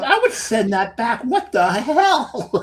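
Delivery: put-on, very high, loud, outraged indignant disbelief. Retelling a waiter pouring old beer into new: imitating own past outrage. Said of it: "I'm like".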